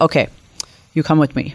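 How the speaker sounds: imitated Hungarian accent. Retelling what the head of sales said to you, in a hungarian accent. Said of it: "he said it in like a really nice Hungarian accent".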